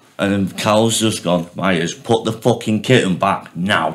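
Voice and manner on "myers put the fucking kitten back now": mock mild, half-shouted yell. Retelling how Cal told Myers to return a kitten: imitating Cal shouting. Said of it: "proper shouting at him".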